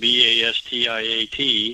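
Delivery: quick letter-by-letter spelling. Recommending a book to listeners, spelling out the author's name fast. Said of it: "I said that fast".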